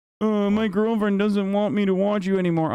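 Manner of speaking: put-on pitiful, as pathetic as possible. Mocking a viewer who announced leaving the stream: imitating a pathetic departure. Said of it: "the most pathetic way possible".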